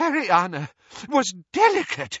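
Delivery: desperate pleading. Answering a claim about a girl's schooling, a man speaks desperately. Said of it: "said Doge desperately".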